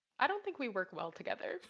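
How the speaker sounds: hushed, very quiet, soft, understated delivery. Retelling what was said after painting a room together: quietly imitating Ben. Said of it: "Ben just very quietly goes".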